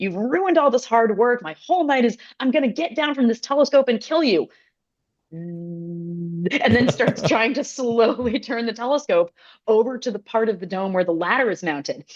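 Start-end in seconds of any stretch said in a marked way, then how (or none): 0.0-4.5 put-on, high, howling furious yell of rage. Retelling how an astronomer shouted down at the night assistant: imitating an angry shout. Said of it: "he's shouting down".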